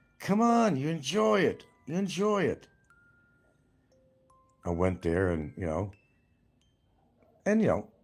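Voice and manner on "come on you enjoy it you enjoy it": put-on slow, very high-pitched Pennsylvania accent. Retelling what his friend Terry said at a baseball event, in Terry's Pennsylvania accent. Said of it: "In his Pennsylvania accent".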